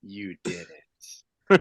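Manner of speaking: confidential aside. Murmuring back to a companion who whispered a secret: quiet murmur. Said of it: "murmur back just as quietly".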